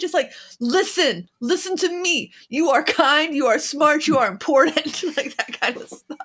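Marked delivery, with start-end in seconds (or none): 0.6-5.0 aggressive, forceful, in-your-face delivery. A speaker demonstrates the affirmations they want to receive: aggressive in-your-face affirmations. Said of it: "significantly more aggressive than the affirmations".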